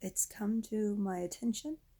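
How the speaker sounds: ordinary talk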